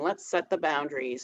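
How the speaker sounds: ordinary talk, nothing marked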